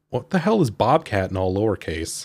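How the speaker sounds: ordinary delivery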